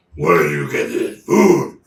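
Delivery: huge, very loud, very low, booming monster bellow. Narrating a game scene, voicing a surprising voice the party hears: booming voice. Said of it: "hears this booming voice".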